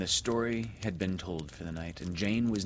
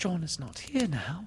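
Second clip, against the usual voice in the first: very high, caught-breath gasp; 9 semitones higher than usual. A woman answers Peter's question about John, gasping. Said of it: "she gasped".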